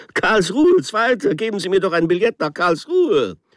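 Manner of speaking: very high-pitched, roaring, bellowing voice. Narrator at a station ticket window with the train about to leave, bellowed. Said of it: "brüllte ich jetzt".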